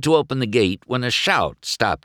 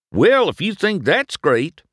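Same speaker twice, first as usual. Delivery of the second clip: proud boasting, showing off, pitched up; 8 semitones higher, 3 dB louder than usual. Reading a children's story, the narrator voices a car showing off his town, proud. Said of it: "Mater said proudly".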